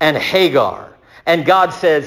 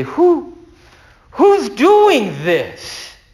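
mock terrified, very high-pitched frightened voice; 9 semitones higher than usual. Retelling a man to the speaker's right asking a question, put-on terrified voice. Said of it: "And it's a terrified voice".

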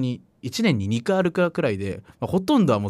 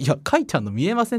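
words spoken through a laugh, pitched up; 8 semitones higher than usual. Retelling what a man said back to an old man, laughing while speaking. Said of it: "って笑いながら言ったんですよ".

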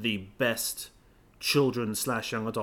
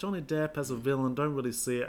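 usual speaking voice

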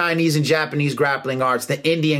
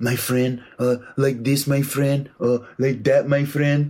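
mock Brazilian accent, pitched lower; 2 semitones lower than usual. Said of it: "used to talk like Horion from the videos".

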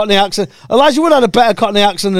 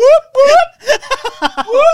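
high-pitched, celebratory whooping, whooping it up. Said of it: "I'd be like".

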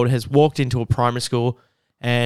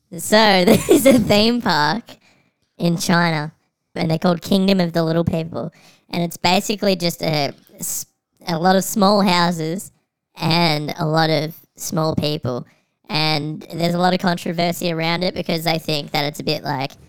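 real high-pitched, squeaky voice; 5 semitones higher than usual. Asked to change his voice, speaker goes on in a high-pitched squeaky voice. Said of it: "pitch change your voice to being real high pitched, squeaky".

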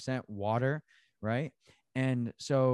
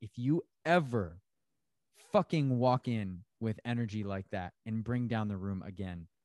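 ordinary talk, nothing marked

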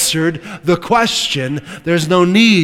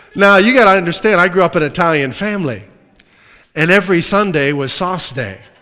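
ordinary talk, nothing marked

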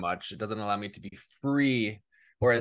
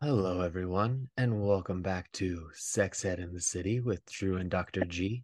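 silky, smooth late-night radio DJ voice; 2 semitones lower than usual. Opening the podcast episode for listeners, in a late-night dj voice. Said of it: "Late night DJ voice".

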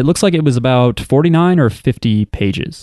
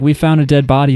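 ordinary talk, nothing marked

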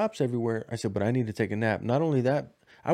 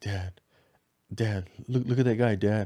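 acted giggly child voice, giggling while talking. A father retells what his son said, imitating him giggling. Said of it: "He's like giggling".

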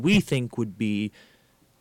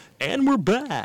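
very high-pitched radio announcer voice; 13 semitones higher than usual. Host demonstrating their habitual return line, in a radio voice. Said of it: "in that radio voice".

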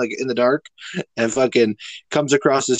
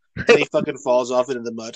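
plain

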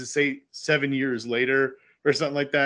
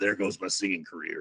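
very low, rough, gravelly rasping voice; 7 semitones lower, 6 dB quieter than usual. Quoting a movie character's line about his damaged voice: imitating a gravelly voice. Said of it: "his gravelly voice, he goes".

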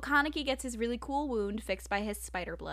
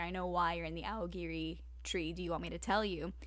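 put-on smugness, lower and quieter; 5 semitones lower, 7 dB quieter than usual. Retelling a fight scene, Kaneki's line to Ayato, imitating smug Kaneki. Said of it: "Kaneki is all smug".

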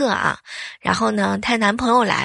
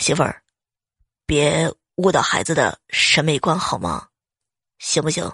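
put-on quiet whispered mutter, lower pitch; 6 semitones lower than usual. Retelling a brother's remark to his wife: imitating a whispered mutter. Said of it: "小声地嘀咕了一声".

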